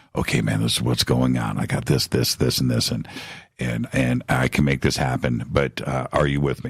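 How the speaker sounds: secretive, hushed, under-the-breath half-whisper. Retelling how a colleague pulled him aside at dinner: imitating someone half-whispering. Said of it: "he's whispering".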